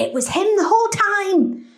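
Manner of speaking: high, incredulous, shocked exclamation. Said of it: "And I was like".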